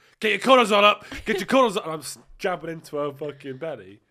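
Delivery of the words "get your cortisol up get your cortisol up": shrill, booming yell, very high and very loud. Speaker retells shouting in her ear so she can't sleep, retelling shouting in her ear. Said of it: "And I'm shouting in her ear".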